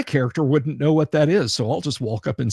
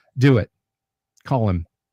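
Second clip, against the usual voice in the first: mock deadpan, completely serious, grave, dead straight; 3 semitones lower than usual. Retelling what another man said after everyone laughed: retelling a deadpan line. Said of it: "deadpan, just completely grave, serious".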